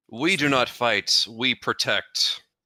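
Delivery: loud, booming beast voice. A player voices his character Kalis speaking; Kalis beast-mode voice. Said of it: "in my most uh, most beast mode least voice possible".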